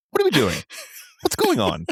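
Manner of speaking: animated sing-song put-on voice, pitch swinging high. Reacting to how a big film kiss is framed, Tucker Carlson voice. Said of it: "I had to do my Tucker Carlson".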